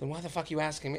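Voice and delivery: mock annoyed tone. Retelling a talk with a woman who kept asking if they were happy, retelling an annoyed reply. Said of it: "And I was so annoyed".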